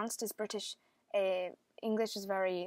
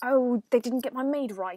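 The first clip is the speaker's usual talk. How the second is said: slightly agitated, faintly irritated, much louder; 4 semitones higher, 10 dB louder than usual. Demonstrating how one accent always sounds, slightly agitated. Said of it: "you always sound like you're just slightly agitated".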